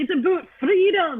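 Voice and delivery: attempted Scottish accent. Responding right after being introduced: attempted Scottish accent. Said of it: "whenever I try and do a Scottish accent".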